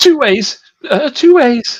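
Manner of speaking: very high, drawn-out, carrying shout. Voicing a confused guide at a junction calling over: shouting in character. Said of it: "he shouts over to you".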